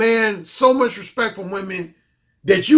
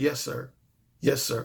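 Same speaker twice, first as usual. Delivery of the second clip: very soft, very low, hushed voice; 7 semitones lower, 11 dB quieter than usual. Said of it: "Her voice was lower".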